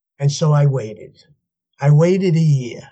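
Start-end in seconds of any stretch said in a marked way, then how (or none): none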